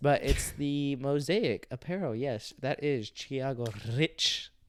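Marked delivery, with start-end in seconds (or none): 2.1-4.4 slow, stretched, heavy stress on rich. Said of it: "Emphasis on rich".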